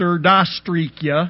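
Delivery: botched Russian pronunciation. Retelling a classmate's attempt to repeat the teacher: imitating a mangled Russian hello. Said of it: "the poor imitation of certain kids".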